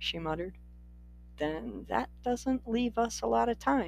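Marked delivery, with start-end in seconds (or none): 1.4-3.9 soft, careful, wary, cautious delivery. He answers her just before they leave together, said cautiously. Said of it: "he said cautiously".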